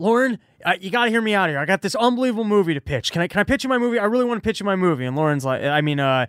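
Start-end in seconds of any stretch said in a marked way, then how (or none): 0.0-5.0 mock worked up, eager, excited, rushed delivery. Retelling a comic pitching a movie to a producer: imitating Reggie all excited. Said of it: "walks up to him all excited, like".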